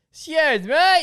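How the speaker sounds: put-on yelling. Telling how someone called out to them while they sat alone, retelling a yell. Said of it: "he just yells out".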